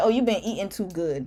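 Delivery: blunt, brutally honest, matter-of-fact delivery. Acting out mom's blunt remark on seeing the speaker: imitating mom. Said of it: "She'll look at me and be like".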